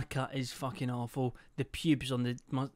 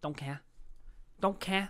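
light put-on Manchester accent; 6 semitones higher, 6 dB quieter than usual. Repeating a viral meme catchphrase from his youth in a little Mancunian accent. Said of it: "doing like this little Mancunian accent".

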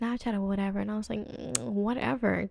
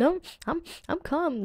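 put-on weepy voice, high, sniffling and crying; 6 semitones higher, 3 dB louder than usual. Retelling answering a police officer: imitating sniffling while crying.

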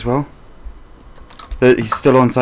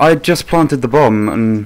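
ordinary talk

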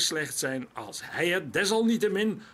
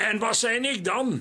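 high, combative, challenging, belligerent shout; 6 semitones higher, 4 dB louder than usual. Marijn retorts to the farmer in the bar, calling out belligerently. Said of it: "riep Marijn krijgshaftig".

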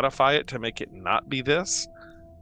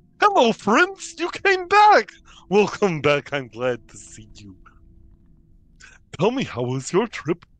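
loud, sing-song animated walrus character voice; 7 semitones higher, 7 dB louder than usual. Voicing a walrus who greets the returning party: voicing a walrus character. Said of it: "The walrus comes sliding across the door and he goes".

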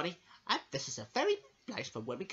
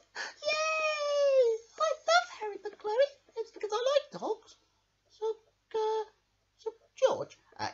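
tiny, high voice with "yay" stretched out; 4 dB louder than usual. Voicing Handy Mouse, excited about reading Harry McClary: Handy Mouse voice. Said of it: "let's get Handy Mouse to come up here now".

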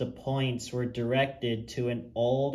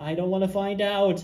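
sudden, loud, high full-out yell; 7 semitones higher, 5 dB louder than usual. An engine jolting backwards answers his driver and fireman, shouted. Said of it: "shouted James as he jolted backwards".

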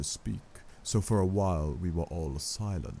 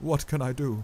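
hoarse, husky, strained, slightly high-pitched; 8 semitones higher, 3 dB louder than usual. Reading a novel, Arthur answers the man who says he can help her: hoarse. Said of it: "asked Arthur hoarsely".

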